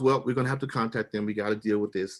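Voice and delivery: ordinary talk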